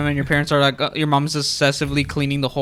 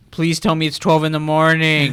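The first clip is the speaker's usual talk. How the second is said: ordinary talk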